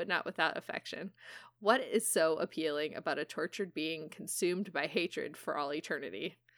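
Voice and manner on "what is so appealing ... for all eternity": ordinary talk, nothing marked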